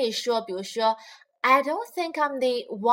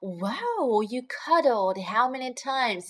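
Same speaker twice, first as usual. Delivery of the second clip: sarcastic, teasing, put-on envious tone. Retelling a friend's teasing line about cuddling: imitating Joey's sarcastic fake envy. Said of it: "他还故意在那儿好像是很羡慕地说".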